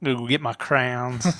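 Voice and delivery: put-on southern dandy voice and accent. Explaining an accent choice, the speaker demonstrates a southern dandy accent. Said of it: "like a southern dandy".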